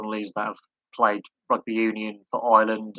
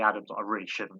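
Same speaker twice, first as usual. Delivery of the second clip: ordinary delivery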